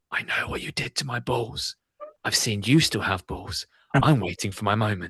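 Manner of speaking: put-on whispering dog voice. Imagining a talking dog whispering a threat: imagining a dog whispering. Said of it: "imagine a dog whispering".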